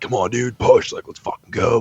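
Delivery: put-on excited yelling. Retelling hyping up a training partner on the press: imitating own hype yelling. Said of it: "obviously we're yelling".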